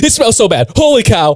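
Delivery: very high, shrill, panicked freaking-out voice. Retelling someone running upstairs about a smelly room, imitating Skits freaking out. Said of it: "freaking out".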